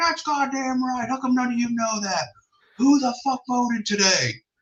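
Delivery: high, screaming drill sergeant voice. Retelling a drill sergeant addressing recruits; retelling a drill sergeant screaming. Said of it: "He's screaming at everybody".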